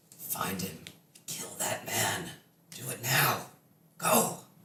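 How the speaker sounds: whispered, internal-sounding voice. Voicing a voice that rings through a player's head: voice of Kelemvor. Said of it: "This is the familiar voice of Kelemvor".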